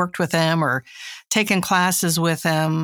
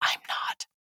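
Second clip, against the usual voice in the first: breathy, hushed, soft whisper. Admitting to another speaker about not being a cat person: whispering. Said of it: "I'm gonna whisper".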